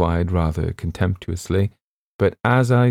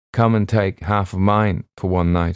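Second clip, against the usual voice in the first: plain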